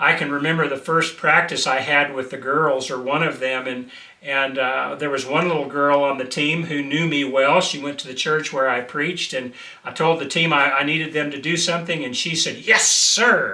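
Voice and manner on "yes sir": put-on manner, heavily dripping with sarcasm. Retelling a girl on his team answering his instruction, mock-sarcastic 'yes, sir'. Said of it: "real sarcastic like".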